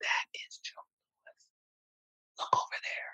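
slow whisper in hushed tones. Retelling a mother pointing out a boxer at a church: imitating hushed tones. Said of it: "in hushed tones".

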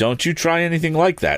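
very high, startled, alarmed shouted cry. Narrator reads Tom answering the bully, shouting in alarm. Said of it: "shouted Tom in some alarm".

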